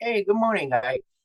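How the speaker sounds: put-on Irish accent, very high pitch. Retelling how a man greeted them on the stairs, imitating an irish accent. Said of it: "I hear the fucking Irish accent".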